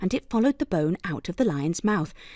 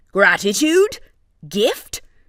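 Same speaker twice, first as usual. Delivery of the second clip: loud, growled, beastly lion voice; 8 dB louder than usual. Narrator reading a lion answering the crane in a story, growling lion voice. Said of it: "growled the lion".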